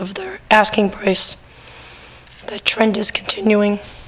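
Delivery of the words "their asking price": lost voice, whispering. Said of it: "sorry about my voice".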